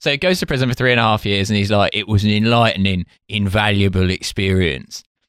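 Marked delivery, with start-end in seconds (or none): 1.9-5.0 put-on plain, generic London East End accent. Retelling how he went to prison, the speaker quotes Dave Courtney in a generic East End voice. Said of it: "I'm doing sort of generic East End voice".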